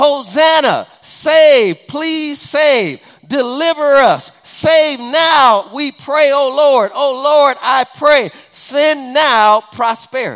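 loud, high shouting at the top of lungs. Explaining a psalm to listeners, imitating a crowd screaming. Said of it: "screaming this and they're yelling this at the top of their lungs".

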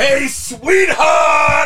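very high-pitched shouting. Showing how to say the line with head tilted: Walt Junior impression. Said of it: "That's how I do my Walt Junior impression".

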